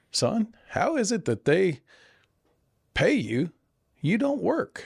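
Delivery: very high, sweet, swooping grandmotherly drawl. Imagining what a late grandmother would ask about the speaker's job, in her sweet drawl. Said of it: "my grandmother would say in her sweet drawl".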